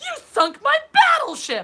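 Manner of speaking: high, loud, slow exclaiming voice. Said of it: "someone loudly exclaims".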